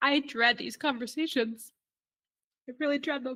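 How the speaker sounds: tearful, crying, teary voice. A doctor responding to Erica, trying to collect themselves: tearful, crying. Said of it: "I think the fact that I'm crying".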